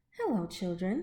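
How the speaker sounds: sugary, sweet, gentle, kindly tone. Narrator voicing a character greeting the children, in a sweet voice. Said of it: "someone said in a sweet voice".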